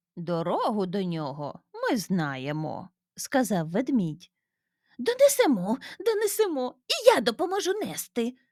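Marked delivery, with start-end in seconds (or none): 5.0-8.3 very high-pitched, gleeful, joyful exclaiming. The little one offers to help the bears carry the tree: joyful exclamation. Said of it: "Радісно вигукнув в'язанчик".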